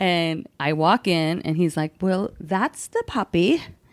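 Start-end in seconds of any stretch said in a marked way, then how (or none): 2.0-3.6 put-on British accent. Retelling arriving at the seller's house: imitating British accent. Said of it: "He was a British guy".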